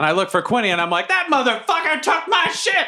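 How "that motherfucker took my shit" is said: shrill, very high yelling. Playing a character shouting from the crowd: yelling in character. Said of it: "No one can hear me".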